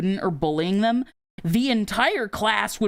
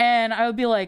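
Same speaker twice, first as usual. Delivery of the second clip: usual speaking voice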